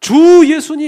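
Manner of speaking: very high, slow, loud drawn-out calling out.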